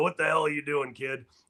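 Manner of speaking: put-on hoarse, rasping old coach voice. Player recalls Tony Muser confronting him as he ran in: raspy Tony Muser voice. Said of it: "raspy voice".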